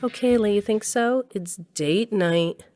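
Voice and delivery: mocking, sarcastic voice. Answering a compliment before date night: sarcastic. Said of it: "Don't say it like that".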